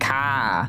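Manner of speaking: heavy Boston accent on "ka", open ah, no r. Showing a grandmother's heavy accent with one word, boston accent on 'ka'. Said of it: "I can say a few words in a Boston accent".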